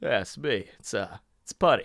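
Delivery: low, soft, mumbled put-on voice. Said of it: "just being like".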